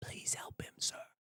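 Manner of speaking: desperate, urgent, pleading hushed whisper. Voicing a frightened warrior begging a companion for help: desperate whisper. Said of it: "he whispers to Landon".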